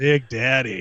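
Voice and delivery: mock seductive announcer voice. Imitating how the broadcaster says the nickname: imitating a seductive announcer. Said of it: "he'll literally say it like that".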